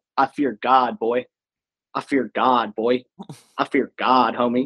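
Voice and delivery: mock scary, menacing tone. Retelling what an opposing player said to a huddle: imitating an opposing player's scary taunt. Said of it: "that's the scariest thing I've ever heard".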